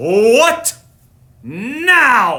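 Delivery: loud growl, drawn-out "now". A narrator reading a story voices Bear, woken by knocking; growling Bear voice. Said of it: "He growled".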